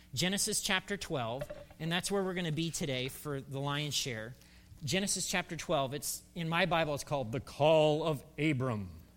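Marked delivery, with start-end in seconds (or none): 7.3-8.8 big, resonant, deep booming voice. Announcing a bible chapter title to listeners, in a deep, booming voice. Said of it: "You always have to say it in a deep, booming voice".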